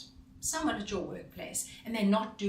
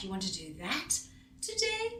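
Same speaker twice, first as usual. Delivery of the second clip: puzzled, rising end, hard stress on "that"; 5 semitones higher than usual. Showing how intonation signals puzzlement: puzzled, stressing 'that'. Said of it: "I'm puzzled. I'm a little unsure. I'm perplexed".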